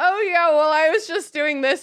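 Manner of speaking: high, chatty, easygoing prattle. Imagining a friend as a talking portrait at the tower: imitating a chatty portrait. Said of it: "she'd be, like, chatting you up".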